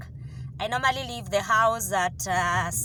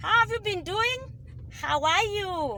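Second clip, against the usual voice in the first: very high, chatty, talking through a mouthful; 10 semitones higher than usual. Speaker greets listeners on the way to work, talking while chewing. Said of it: "Don't ask me why I'm chewing".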